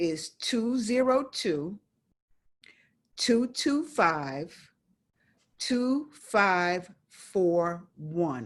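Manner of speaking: numbers read out very slowly, evenly spaced. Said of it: "I'm gonna say it very slowly".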